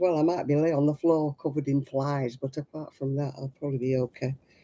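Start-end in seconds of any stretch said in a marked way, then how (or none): none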